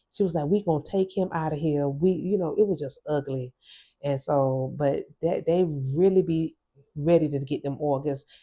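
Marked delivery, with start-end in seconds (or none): 0.5-1.9 imitated nasty, mean tone. Retelling what a lady at the hospital said: imitating a nasty, mean tone. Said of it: "the lady was really nasty, really mean".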